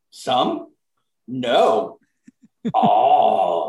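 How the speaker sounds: caveman voice with drawn-out "all". A podcast host, wrapping up the intro, briefly talks like a caveman. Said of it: "Now that I'm done talking like a caveman".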